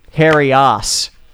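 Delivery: put-on Australian accent. Answering a request to say the character's name: Australian accent. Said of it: "What about an Australian accent?".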